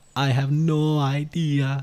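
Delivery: loud, drawn-out, clumsy bad German accent. A speaker quotes the TF2 Medic, in a bad TF2 Medic impression. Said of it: "that was a terrible German".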